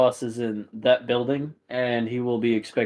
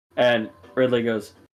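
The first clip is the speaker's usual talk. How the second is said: usual speaking voice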